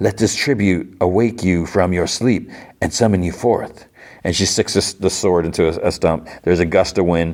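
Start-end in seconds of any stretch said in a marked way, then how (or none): none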